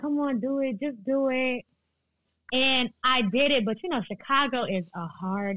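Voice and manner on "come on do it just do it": ordinary delivery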